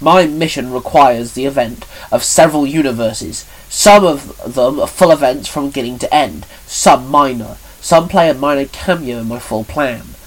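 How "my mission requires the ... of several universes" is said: plain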